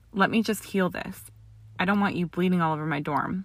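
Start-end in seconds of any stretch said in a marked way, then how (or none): none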